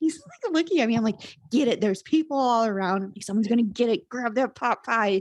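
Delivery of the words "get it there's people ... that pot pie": put-on yelling, higher. Retelling urging her partner to grab a pot pie: imitating her own yelling. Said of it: "I'm yelling at him".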